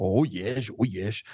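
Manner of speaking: low, slow, measured and deliberate delivery. Retelling an interview answer by Professor Jung: imitating Jung. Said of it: "Você tá começando a interpretar".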